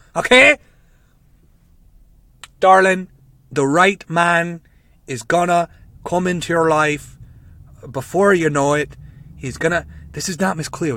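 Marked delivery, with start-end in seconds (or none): 0.2-9.9 put-on Irish accent. Playing a late-night phone psychic, Irish accent. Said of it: "It's just a fucking Irish accent".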